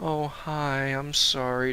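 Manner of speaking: barely audible, slow, dragged-out, timid voice. Acting out a man's timid hello and apology, imitating someone shy.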